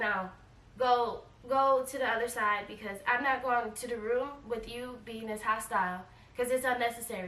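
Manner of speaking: normal talking voice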